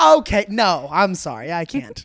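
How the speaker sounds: very slow, loud, proper talk-show host voice, swooping pitch. Imagining Ryan Seacrest politely declining an offer: proper Ryan Seacrest voice. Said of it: "Like a talk show host who's very proper".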